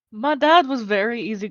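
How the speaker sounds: put-on accent drifting toward Scottish. Talking about their parents, slipping almost into a scottish accent. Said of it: "I'm almost going Scottish".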